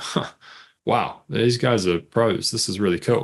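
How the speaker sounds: hushed, impressed, admiring murmur under the breath. Imagining a client receiving the pack, imitating someone muttering under their breath. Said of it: "mutter under their breath".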